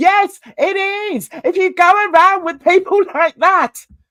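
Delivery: outright high-pitched shouting. Speaker addressing YouTube viewers, shouting. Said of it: "Sorry, I'm shouting".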